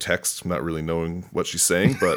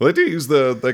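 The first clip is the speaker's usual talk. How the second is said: voice cracking mid-phrase, jumping high; 7 semitones higher, 6 dB louder than usual. A fourteen-year-old speaking mid-sentence when the voice cracks, voice cracking. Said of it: "my voice just cracked".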